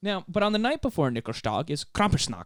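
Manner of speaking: faint, somewhat Swedish-sounding accent. Playing a dad explaining a holiday tradition, in an accent sounding a bit swedish. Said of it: "You sound a little bit more like Swedish".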